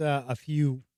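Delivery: ordinary delivery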